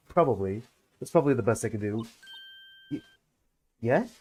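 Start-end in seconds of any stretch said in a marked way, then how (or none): none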